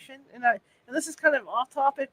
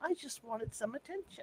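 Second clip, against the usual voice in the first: put-on faint, breathy little girl's whisper; 14 dB quieter than usual. Recounting a voice recording caught in the house: little girl voice. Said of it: "It almost sounds like a little girl".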